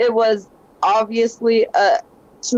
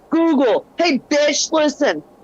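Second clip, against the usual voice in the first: mock fed-up, angry, pitched-up voice; 5 semitones higher than usual. Speaker reenacts yelling at the assistant on their phone, retelling an angry yell. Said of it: "yell in an angry voice at my phone".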